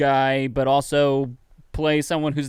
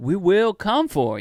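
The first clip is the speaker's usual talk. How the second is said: threatening Georgia drawl with pitch raised up; 5 semitones higher than usual. Retelling a threatening line from a video: threatening Frank Underwood voice. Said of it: "in a very threatening way".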